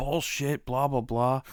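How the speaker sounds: angry, freaked-out outburst, blowing up in rage. Retelling how a boy freaked out over a called fail: imitating someone freaking out. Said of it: "freaked out".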